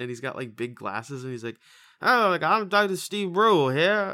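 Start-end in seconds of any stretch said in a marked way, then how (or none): 2.0-4.1 very loud, high-pitched speech with an impediment, blurted. Explaining a TV comedy character to a listener, Dr. Steve Brule impression. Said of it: "he kind of has like a speech impediment".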